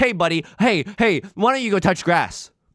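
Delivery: needling, taunting tone. Speaker showing how they would go after someone in chat, mock attacking a chatter. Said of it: "That's my impression of of attacking someone in chat".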